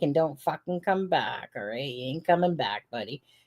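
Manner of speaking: put-on muttering under breath. Retelling what a stepfather says at the door: imitating Christopher Proud muttering under his breath. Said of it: "under his breath".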